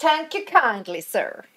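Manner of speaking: put-on Texan drawl. Playing a British character mocking an American: mocking Texan slur. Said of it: "he says with, like, a, almost, like, Texan slur".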